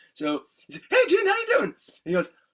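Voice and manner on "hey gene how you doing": put-on boy's voice, very high-pitched and very loud. Retelling how a boy greeted Gene when they were kids; imitating Tommy's high voice. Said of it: "Tommy had this great high voice".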